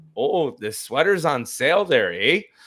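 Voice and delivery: put-on high-pitched Canadian accent. Retelling a friend's story of Canadian customers at a fly fishing shop; Canadian accent impression. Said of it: "they'll come in from Canada, come in and be like".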